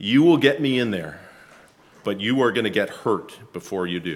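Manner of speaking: as serious a tone as possible, grave. Recounting what the speaker told them, retelling a serious tone. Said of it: "as serious a face and a tone of voice as I possibly could".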